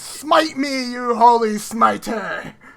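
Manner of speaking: very slow, loud, dragged-out shouting. Joking that another player dares the dice: imitating someone shouting. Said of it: "He's just shouting".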